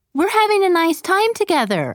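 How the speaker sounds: rather defensive, high and swooping. A wife answers her husband's sudden question during an afternoon together, rather defensively. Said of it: "rather defensively".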